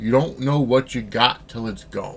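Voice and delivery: normal talking voice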